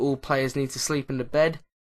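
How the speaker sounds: plain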